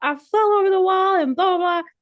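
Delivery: acted-out very high, upset, flustered, frantic babble. Retelling a pit stop where a crew guy fell over the wall: imitating someone freaking out. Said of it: "he's just freaking out about it".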